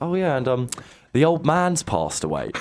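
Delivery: ordinary delivery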